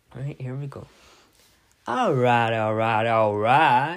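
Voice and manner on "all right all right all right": very loud, belted-out delivery. Going ahead with an impression despite objection: impression of someone. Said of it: "I'm going to say it like he does".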